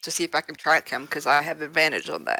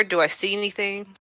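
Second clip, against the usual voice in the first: normal talking voice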